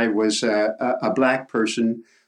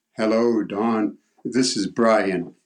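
deep, low, slow, measured voice. Retelling a phone call from the Prime Minister; deep voice as Brian. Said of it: "I heard this deep voice".

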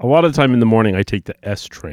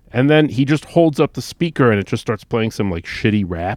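ordinary talk, nothing marked

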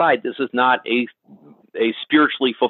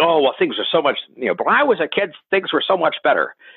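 put-on old-Hollywood movie accent; 4 semitones higher than usual. Imitating someone saying things were better in the past: Jimmy Stewart accent. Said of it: "my best Jimmy, Jimmy Stewart accent".

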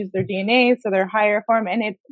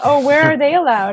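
sarcastic delivery with raised, pitched-up tone; 5 semitones higher, 6 dB louder than usual. Trading jokes with other speakers, sarcastic. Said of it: "I'm being sarcastic".

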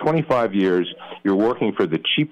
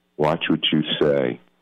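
put-on calm, soft voice, pitched lower; 4 semitones lower than usual. Retelling a quiet warning at a party: imitating a calm soft voice. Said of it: "very calmly in a soft voice says".

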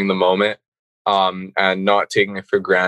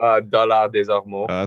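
put-on French accent. Asked by the host to say the hometown properly, in a French accent. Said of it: "how's the French accent?".

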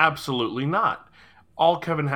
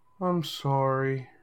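put-on insincere emotional tone; 3 dB quieter than usual. Asked to say the boy's apology, speaker imitates a boy faking emotion. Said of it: "That is the voice of a boy faking emotion".

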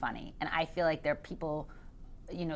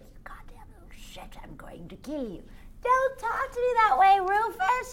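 very high, put-on crazy character voice; 3 dB louder than usual. Recalling escaping into voices as a child, the speaker acts one out: crazy childhood character voice. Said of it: "talking to all these crazy voices".

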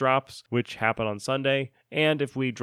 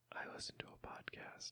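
very quiet, hushed, secretive whisper. Asking listeners to tell somebody about the podcast, the speaker demonstrates whispering. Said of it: "Whisper and say".

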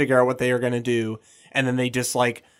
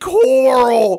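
mock distraught sobbing wail, very high, very loud; 11 semitones higher, 8 dB louder than usual. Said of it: "crying, freaking out".

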